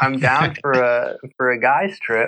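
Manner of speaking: ordinary talk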